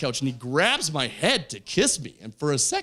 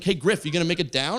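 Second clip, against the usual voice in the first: ordinary delivery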